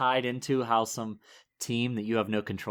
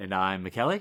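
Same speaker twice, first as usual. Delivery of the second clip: rising end pitch, lower; 5 semitones lower than usual. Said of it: "I sound like Ned Flanders".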